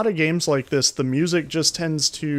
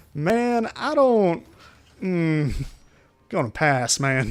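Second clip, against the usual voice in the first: put-on drawn-out, slow Southern accent. Answering an invitation to a human barbecue: Zeke impression. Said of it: "your impression of Zeke was actually surprisingly good".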